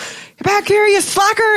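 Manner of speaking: high put-on yelling.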